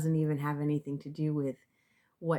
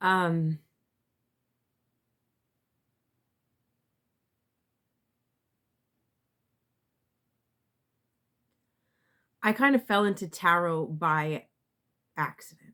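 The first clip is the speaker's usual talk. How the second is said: emotional, trying not to cry, holding back tears; 5 dB louder than usual. Sharing a personal story, holding back tears. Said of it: "I don't know why I'm feeling emotional right now".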